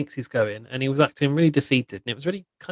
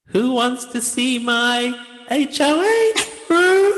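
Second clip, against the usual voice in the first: put-on robot voice, higher and louder; 11 semitones higher, 6 dB louder than usual. Retelling what a houseguest said while doing a Zingbot impression. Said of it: "her best Zingbot impression".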